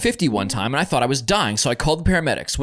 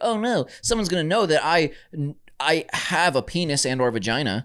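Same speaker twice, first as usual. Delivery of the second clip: ordinary talk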